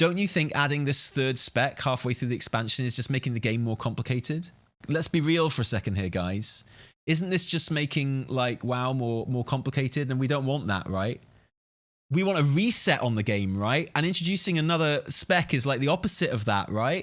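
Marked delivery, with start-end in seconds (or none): none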